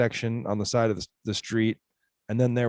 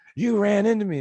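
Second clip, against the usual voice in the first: put-on angry accusing tone, higher pitch; 10 semitones higher, 3 dB louder than usual. Retelling what the bus driver shouted after hitting the van: imitating an angry driver. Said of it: "She was all mad".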